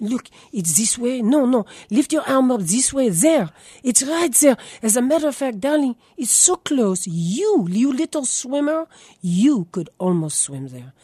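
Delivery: put-on woman's voice, English with a French accent. Speaker quotes his mother answering his question: her french accent. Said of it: "in her French accent".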